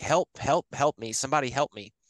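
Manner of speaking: panicked, frantic cry, held back and contained. Retelling how a lady ran into the room, retelling a woman's screaming. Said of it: "she's screaming like".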